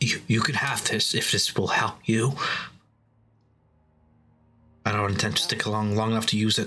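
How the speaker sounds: slightly anxious, nervous voice. Retelling a story, voicing a character's added remark after he was attacked, kind of nervous. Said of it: "he just adds in a kind of nervous voice".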